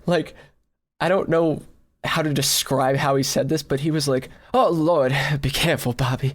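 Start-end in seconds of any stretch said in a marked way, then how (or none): 4.5-6.3 shaky, quavering, trembling voice. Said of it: "like with like a shaky voice".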